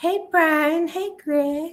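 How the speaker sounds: very high-pitched, slow, drawn-out, stretched words. Greeting Brian and Greg in a put-on voice, imitating Natalie's voice. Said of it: "I was trying to sound like Natalie".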